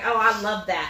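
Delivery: ordinary talk, nothing marked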